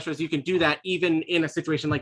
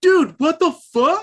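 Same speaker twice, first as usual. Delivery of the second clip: shrill, loud bro dude voice; 12 semitones higher, 8 dB louder than usual. Describing a voice heard elsewhere in a corn maze: wicked Chad voice. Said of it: "you just hear like a wicked Chad voice go".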